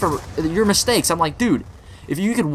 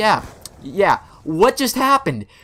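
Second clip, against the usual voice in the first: acted angry, mad tone with rising pitch. Retelling a float trip after the boat flips: retelling being mad. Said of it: "I'm mad".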